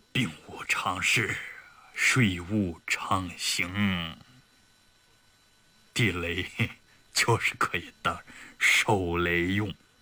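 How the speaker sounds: put-on muttering while drunk. A drunk deputy commander mutters at a drinking table; drunken mumbling. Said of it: "他嘟囔着".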